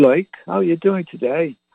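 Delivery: put-on English accent, pitched a bit high. Retelling how a Venezuelan coworker greeted you, in an English accent. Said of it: "A Venezuelan guy speaking with an English accent".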